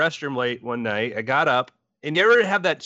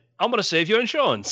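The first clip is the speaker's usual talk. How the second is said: high-pitched, put-on British accent; 6 semitones higher than usual. Retelling what a lizard on the fireplace log seemed to say, british accent. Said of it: "spoke in a British accent".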